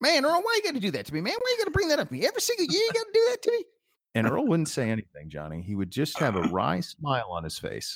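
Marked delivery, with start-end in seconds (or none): 0.0-3.6 very high, swooping, rushed, put-upon exasperated voice. Retelling what Coop said walking off the set each year: imitating Coop. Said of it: "Coop would say".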